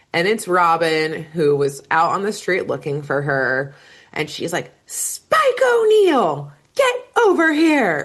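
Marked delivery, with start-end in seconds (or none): 4.8-8.0 mock very high, swooping, drawn-out scream. Recapping a show, the speaker voices Robin calling Spike over: imitating Robin screaming. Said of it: "we do hear someone scream Spike's name".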